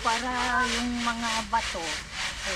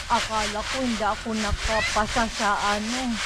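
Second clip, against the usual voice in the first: plain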